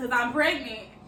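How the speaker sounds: ordinary delivery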